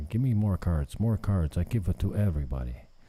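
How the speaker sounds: put-on Mexican accent. Retelling what a local guy says every time he sees the speaker, Mexican accent. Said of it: "A Mexican accent?".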